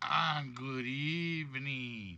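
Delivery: put-on spooky Halloween voice. Greeting the audience at the start, joking: Halloween voice. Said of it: "what am I doing Halloween voices for?".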